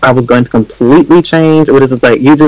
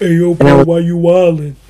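mock-macho, fake masculine voice, slower; 5 semitones higher, 4 dB quieter than usual. Recalling when he first came out, the speaker does a put-on macho voice. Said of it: "trying to give mass for mass tease".

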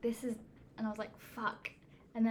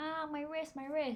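woman's high, wailing, complaining cry; 5 semitones higher than usual. Retelling a bus crash, imitating a woman wailing. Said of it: "this woman, like, wailing".

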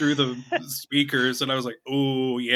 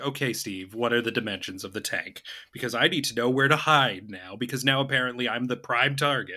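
ordinary talk, nothing marked

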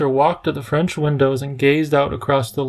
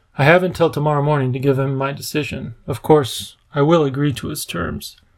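ordinary delivery, nothing marked

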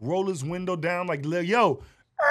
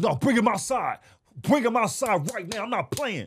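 heated, angry, threatening, ready to fight; 4 semitones higher than usual. Retelling how a man showed up at the house ready to fight, mock-angry. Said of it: "Donte showed up to my house ready to fight".

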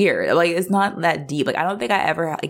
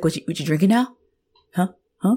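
strange, weird, upset, challenging tone; 3 semitones higher than usual. Retelling how Jack walks in and sees him drinking: imitating Jack's weird reaction. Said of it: "He's like".

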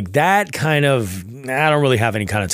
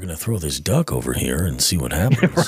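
put-on calm, soothing voice, pitched lower; 6 semitones lower than usual. Imitating a kayak angler who sounds like Bob Ross: Bob Ross voice. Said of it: "he's got that Bob Ross voice".

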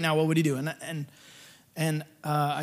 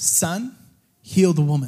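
put-on authoritative, commanding voice, louder; 5 dB louder than usual. Retelling what was heard before praying for a woman: imitating speaking with authority. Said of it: "he spoke with authority".

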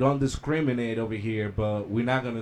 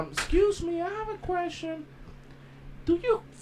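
put-on very high old lady voice. Telling about an old lady who called his job, in an old lady voice. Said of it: "That's your lady voice?".

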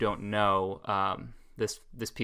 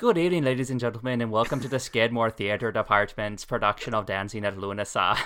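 terrible fake Irish accent. A theater actor shows how his opening speech would have sounded: terrible Irish accent. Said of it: "did my speech in a terrible Irish accent, which would have sounded something like".

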